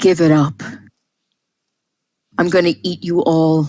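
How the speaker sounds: fast, greasy, oily, disgusting creature voice. A narrator voices what the creature's foes hear in their minds: greasy, disgusting voice. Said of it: "greasy, disgusting voice say".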